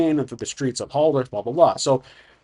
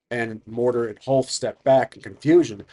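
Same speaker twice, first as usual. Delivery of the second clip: ordinary talk, nothing marked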